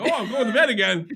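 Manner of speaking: doglike put-on voice. Acting out the dog Sammy being put in the kennel: Sammy impression. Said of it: "Your Sammy impression".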